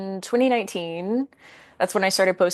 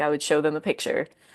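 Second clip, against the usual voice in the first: ordinary talk, nothing marked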